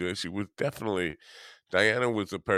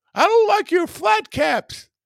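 very high, very loud, shrill, mad ranting yell; 11 dB louder than usual. Faking a fight with Dean, tell him off in a not very good Dr. Phil impersonation. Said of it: "It's not a very good Dr. Phil impersonation".

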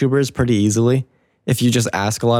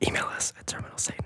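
hushed, much softer whisper. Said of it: "I'm gonna whisper the rest of the episode".

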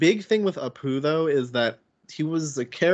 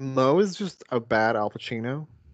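ordinary delivery

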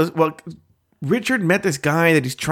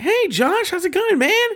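very high, overjoyed, super happy voice; 14 semitones higher than usual. Retelling a greeting to a newly arrived friend: imitating Scott sounding super happy. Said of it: "Scott becomes super happy".

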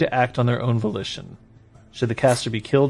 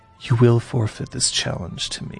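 whispering. Voicing a character who leans forward to a player: whispering in someone's ear. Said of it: "he whispers in your ear".

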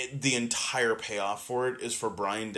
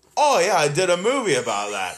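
loud, swooping, badly faked Australian accent; 7 semitones higher, 10 dB louder than usual. Retelling a man's reply after witness protection is explained to him, bad australian accent. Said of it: "Your Australian accent is just so on point".

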